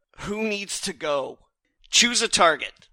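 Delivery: high, loud shouted battle cry. Voicing a character in a fight calling for a target: shouting. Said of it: "Erlin shouts out".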